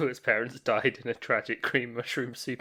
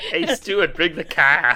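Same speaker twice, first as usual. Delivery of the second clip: very loud, pitched-up put-on Boston accent; 5 semitones higher, 11 dB louder than usual. Joking about people who live on a golf course: mock Boston accent. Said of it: "Boston-y kind of".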